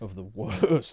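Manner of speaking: slow, laughing delivery. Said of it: "I don't know why I'm laughing".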